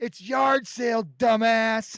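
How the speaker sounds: angry yell. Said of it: "the kid laying on the ground yells back up".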